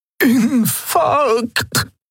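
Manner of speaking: very high-pitched, hoarse, rasping croak. A healer clutching her chest, croaking. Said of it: "krächzte die Heilerin und hielt sich die Brust".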